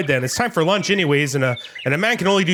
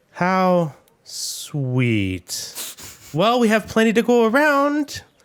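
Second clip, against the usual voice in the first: dry sarcasm, very slow and drawn out; 3 semitones higher than usual. Narrator voicing Gregor's wife Wanda as guests arrive, sarcastic Wanda voice. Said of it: "she kind of says sarcastically".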